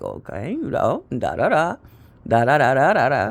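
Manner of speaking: deep, swooping diplomatic voice. Imitating how Eric talks: imitating brother's deep diplomatic voice. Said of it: "That's how he talk".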